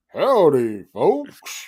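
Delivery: swooping sing-song with wide pitch swings. Doing the big Tex from the state fair: Big Tex voice. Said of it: "I could do the big Tex from, uh, the, the, the state fair".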